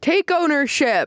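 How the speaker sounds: play-acted, high, sudden, shrieking scream. Retelling a reality show scene where one man screams at another: imitating someone screaming. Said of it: "he screams it".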